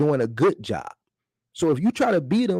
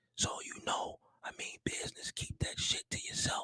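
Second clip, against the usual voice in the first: quiet, secretive whispering; 17 dB quieter than usual. Sharing something he means to keep to himself, the speaker is whispering. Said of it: "I'm whispering".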